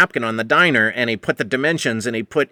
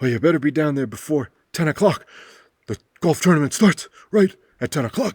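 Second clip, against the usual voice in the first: put-on voice of a dying old man, near death; 2 semitones higher than usual. Retelling what Wally said about lighting the cannon: imitating Wally's dying voice. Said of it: "That's how he talks, 'cause he's, he's dying".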